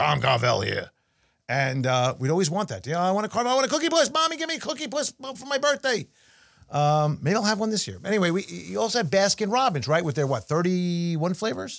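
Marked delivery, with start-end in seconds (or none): 0.0-0.9 put-on grumbly voice, much lower pitch. Recalling an ice cream company's TV ads, doing a grumbly Tom Carvel impression. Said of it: "he always had that grumble".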